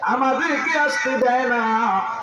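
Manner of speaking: crying out, appealing tone.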